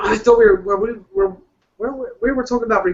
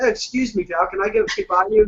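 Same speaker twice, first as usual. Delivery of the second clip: put-on polite Canadian voice. Describing Canadian road rage, acting out a Canadian driver: polite Canadian driver impression. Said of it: "up in Canada, they just get out like".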